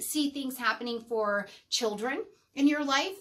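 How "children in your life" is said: ordinary talk, nothing marked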